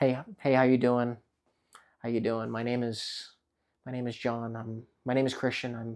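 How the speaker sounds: put-on awkward, nervous, uncomfortable, stumbling delivery. Imitating people introducing themselves at a networking event: imitating an uncomfortable person. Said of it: "it's very uncomfortable".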